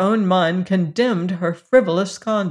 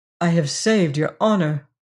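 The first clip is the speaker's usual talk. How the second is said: usual speaking voice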